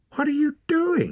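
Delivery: very high, cried-out voice. A girl sees a man cut a pouch from someone's belt; crying out. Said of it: "cried Ren".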